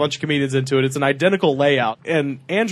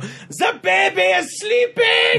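shrill, very high put-on German accent. Retelling how the lady upstairs yells out her window: put-on German accent. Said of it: "I guess I did just do a German voice".

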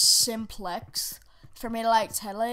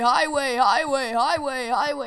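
loud, deliberate voice cracks repeated on "Highway"; 3 semitones higher, 7 dB louder than usual. Announcing the map name: deliberate voice crack. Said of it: "I added my voice crack in there".

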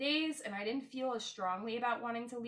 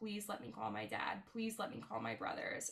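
pleading, begging tone repeated over and over; 5 dB quieter than usual. Retelling pleas from a hospital bed: imitating a begging plea. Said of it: "I begged and begged and begged".

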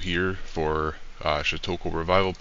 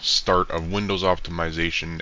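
ordinary talk

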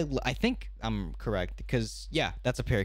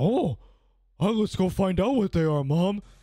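dopey cartoon voice, higher and louder; 7 semitones higher, 7 dB louder than usual. Voicing a golden retriever the way the speaker imagines it, in a Patrick Star voice. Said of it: "they just have a Patrick voice".

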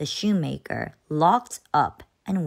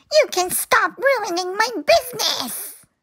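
very high, piercing, shrill shout; 4 dB louder than usual. Narrator reads the shoe seller's reply to the shoemaker at his door, shouted. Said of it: "Shouted the seller".

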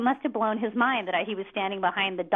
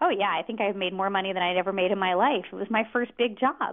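plain

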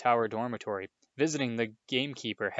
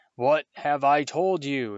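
slow, thunderous, thundering roar; 3 semitones higher, 6 dB louder than usual. Reading the uncle's words to Harry at the kitchen table, thundering. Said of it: "thundered his uncle".

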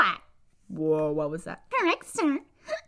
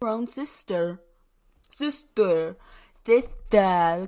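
put-on cartoon dragon voice, lower pitch; 7 semitones lower than usual. Recording lines in Spike mode, Spike voice. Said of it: "that takes a lot of air to do Spike".

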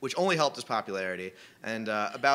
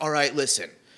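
put-on excited voice, higher and louder; 3 semitones higher, 5 dB louder than usual. Retelling how a brother pitches his next big idea, imitating an excited brother. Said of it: "He's super excited".

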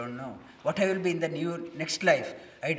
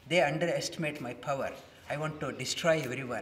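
ordinary delivery

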